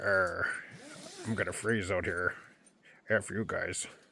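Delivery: very hushed, low mutter under the breath. Imitating Steven, who is sleeping outside in the cold: imitating Steven. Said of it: "He's like".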